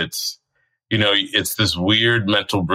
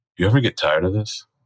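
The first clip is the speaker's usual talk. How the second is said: whispered speech. Retelling a question one performer asked another in the wings: imitating someone whispering. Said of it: "he whispers to Wayne".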